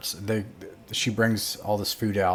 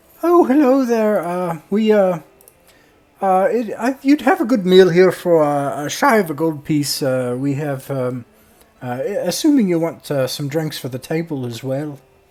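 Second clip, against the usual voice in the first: exhausted, worn-out voice stumbling over words, raised; 7 semitones higher, 7 dB louder than usual. Voicing the tavern keeper greeting the players: exhausted tavern keeper. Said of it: "she comes over exhausted and she says".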